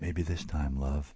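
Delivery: softly murmured. Narrator voicing a woman speaking to a half-living body, murmured. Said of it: "she murmured to the half-living body".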